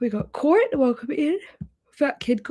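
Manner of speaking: yawning through the words. Host welcoming viewers by name at the start, yawning while talking. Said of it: "Sorry, I'm already yawning".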